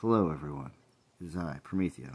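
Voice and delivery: very quiet, hushed voice. Retelling how Prometheo greeted the riled-up stream: imitating Prometheo's quiet voice. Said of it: "he came on with a real quiet voice".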